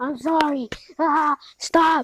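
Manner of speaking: high, loud, drawn-out screams in long wails. Retelling a story scene where a badly burned character cries out: imitating a scream. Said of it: "screaming as he's like".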